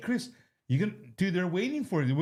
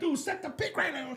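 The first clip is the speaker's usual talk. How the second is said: very high, pitched-up hollering; 10 semitones higher than usual. Speaker recalls watching a basketball game at home, retelling own yelling. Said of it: "I'm yelling at the dude".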